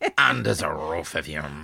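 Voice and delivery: mock French accent, deep. Repeating the Frenchman's phrase, imitating Claude's French accent. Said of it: "with his French accent".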